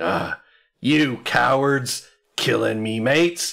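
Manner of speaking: large, brawler-like voice, jeering, mildly belted outburst. Narrating a nearby commotion, a stranger belts out: large booming voice. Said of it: "this large, booming voice just sort of belts out".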